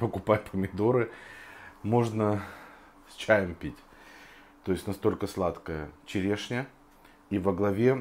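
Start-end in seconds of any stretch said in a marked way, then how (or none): none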